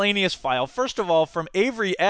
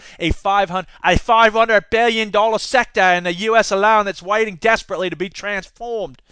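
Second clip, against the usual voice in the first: worst, very bad put-on Australian accent; 3 semitones higher, 4 dB louder than usual. Quoting Rupert Murdoch, the film's distribution partner; worst Australian accent ever. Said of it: "the worst Australian accent ever".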